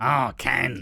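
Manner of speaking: put-on raspy smoker's voice. Retelling a Coronation Street scene, imitating Deirdre's smoker voice. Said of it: "she's got the biggest smoker voice ever".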